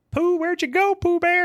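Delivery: very high-pitched calling out. Retelling a movie scene, imitating someone calling for a lost dog. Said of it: "he's trying to call the dog".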